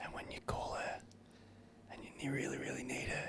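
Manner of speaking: soft, unvoiced whisper.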